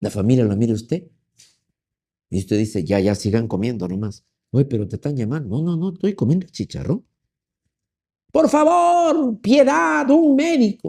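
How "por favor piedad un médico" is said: very high, slow, drawn-out cry of anguish. Acting out someone at a family meal begging for a doctor, mock-anguished plea for help. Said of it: "con voz de angustia que dice".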